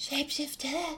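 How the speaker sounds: barely-there, very soft, high-pitched half-whisper. Voicing a character telling another she is a shapeshifter: half-whispering very softly. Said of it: "she whispers very softly".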